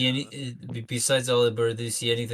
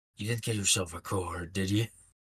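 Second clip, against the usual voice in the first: whispered in character voice, lower and quieter; 3 semitones lower, 5 dB quieter than usual. Playing a character who wakes and quietly questions a companion: whispering in character. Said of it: "and just whispers".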